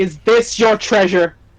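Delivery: big, loud booming voice. A player in a tabletop game holds out an item and asks, booming voice. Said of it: "Booming voice".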